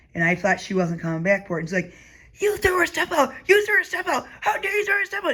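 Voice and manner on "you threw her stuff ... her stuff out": mock screaming, very high-pitched and shrill. Retelling how someone got in their face: imitating someone screaming. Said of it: "screaming at me".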